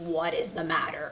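low, soft, croaking frog voice. Telling a fable, the frog answers the quail's call in a croaky frog voice. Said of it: "That's my frog voice".

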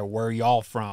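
thickest Southern drawl, vowels stretched out. Retelling how a brazilian man asked them where they were from, in the thickest southern drawl. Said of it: "with the southernest drawl he could muster".

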